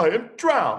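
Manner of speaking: high, gasping cry. The old green grasshopper, spitting out rainwater, speaks first: gasped. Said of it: "gasped the old green grasshopper".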